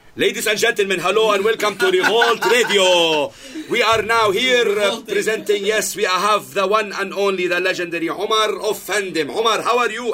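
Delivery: mock very high, drawn-out, screaming voice. Recalling early radio interviews, acting out the old intro: retelling yelling on the mic. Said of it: "I'm like screaming".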